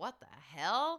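ordinary talk, nothing marked

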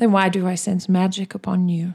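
silky, extremely smooth character voice. A narrator voices a character who leans forward to ask: extremely smooth voice. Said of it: "in a voice that sounds extremely smooth".

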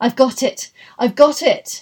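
loud, drawn-out cry with wild effort. A sick man suddenly sits up in bed with a wild effort, cried out. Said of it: "He cried".

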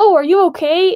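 sudden high shout. Retelling an audience member's call to a screen character: imitating someone yelling. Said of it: "one person yelled".

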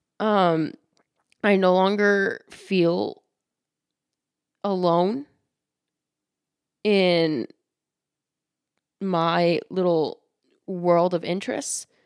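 tearful, halting, voice catching mid-phrase. Podcast host reflecting on what the podcast has given them, tearing up. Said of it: "I'm starting to tear up a little bit".

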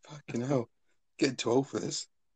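talking through laughter. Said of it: "Can't even get one bloody word out".

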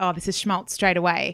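normal talking voice

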